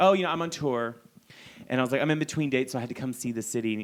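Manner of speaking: usual speaking voice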